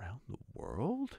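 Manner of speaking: stunned, very hushed, barely audible murmur. Passepartout, overcome with astonishment at Mr. Fogg's news, gives an astonished murmur. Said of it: "He murmured".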